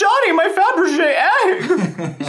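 very high, loud, drawn-out, swooping cry. Retelling a favourite scene from Serial Mom: imitating a Serial Mom character. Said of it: "She says it exactly like that".

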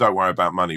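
ordinary delivery

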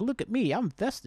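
high, mock festive, show-off boasting. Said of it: "I'm like".

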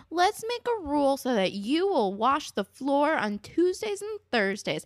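mock condescending, slow, high, as to a small child. Mimicking how he said it, mock-condescending, as to a child. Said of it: "so fucking condescending. Like the way you talk to a child".

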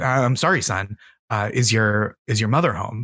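imitated flustered voice. Telling a joke where a salesman meets a strange kid: imitating a flustered salesman. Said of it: "the salesman, obviously flustered, said".

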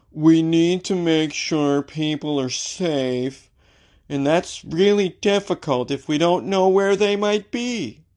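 dull corporate spokesperson drone, flat and bored. Voicing a spokesperson for IKEA in a put-on boring voice. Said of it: "Let me do a boring voice".

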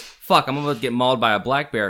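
normal talking voice

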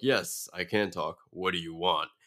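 mocking, put-on voice of a rude, obnoxious monster. Describing a cheap movie's talking alien monster, imitating a rude monster. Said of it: "he talks like an asshole".

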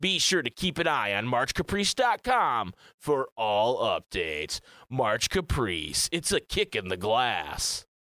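TV commercial announcer, ad-read pitchman voice. Host reading an event announcement for listeners, in a Tang commercial voice. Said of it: "I was doing my Tang commercial voice".

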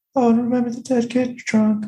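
small, squeaky, very high put-on voice. Retelling a joke made about a movie's ending, in a little voice. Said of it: "I did this like little voice".

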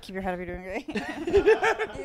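mumbling aloud. Act out how he does his self-affirmations, imitating someone mumbling to himself. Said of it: "but he'll mumble them to himself".

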